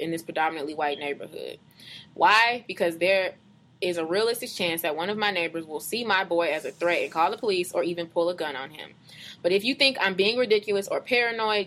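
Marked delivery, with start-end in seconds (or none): none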